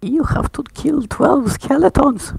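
put-on very high-pitched, very loud old-man holler. Voicing an old man who offers the players a quest: old man voice. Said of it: "the old man says".

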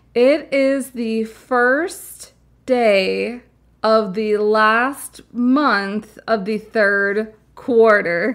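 very slow, careful, word-by-word delivery.

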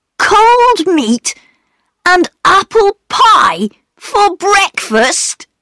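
very high, amused, spoken through laughter. Peter answers his mother about their supper, laughing. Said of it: "laughed Peter".

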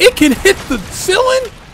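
high, loud tone of shocked disbelief.

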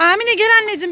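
high-pitched, loud calling out.

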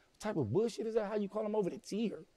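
enraged, high-pitched angry screaming. Retelling screaming at the convicts after bad news, re-enacting own screaming. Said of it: "get to screaming like".

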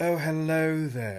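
high, effeminate, projected. Praising a voice actor's work, doing a Liam O'Brien effeminate character voice. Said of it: "does such a good effeminate kind of character".

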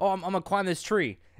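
put-on thick Scottish accent. Retelling Mikey's funny Instagram story about climbing a tree, imitate Mikey's very thick Scottish accent. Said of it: "in a very thick Scottish accent".

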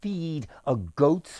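plain

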